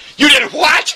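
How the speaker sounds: high, loud, shocked and outraged shout.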